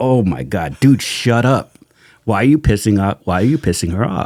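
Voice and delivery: acted cringing reaction. Telling a story, acting out the guys cringing as someone angers a nurse. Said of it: "We're cringing like".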